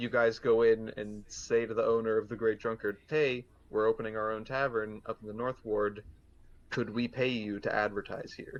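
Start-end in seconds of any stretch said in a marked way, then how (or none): none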